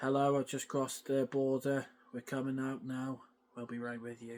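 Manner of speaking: put-on deep, emotionless, robotic monotone. Speaker imitates an actress's film character, mimicking a deep, emotionless voice. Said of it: "really deep, really stoic, really emotionless".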